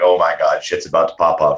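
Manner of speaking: normal talking voice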